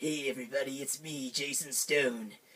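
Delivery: hard, rough, really raspy character voice. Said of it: "talking in like a really raspy voice".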